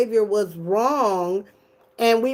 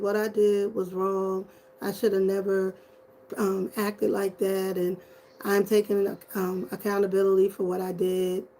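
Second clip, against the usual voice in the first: put-on flat, emotionless tone, quieter; 3 semitones lower, 6 dB quieter than usual. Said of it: "with no feeling and no tears, and his affect was flat".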